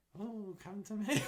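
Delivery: put-on very high, slow, drawn-out child-catcher voice. Doing the asked-for voice for the other speaker: child snatching voice. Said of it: "Do your child snatching voice".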